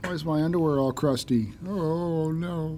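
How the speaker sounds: put-on groggy, woozy, half-sedated, dazed voice. Reenacting coming out of heavy drugs, imitating drugged-out self. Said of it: "That's my drugged out [name] voice".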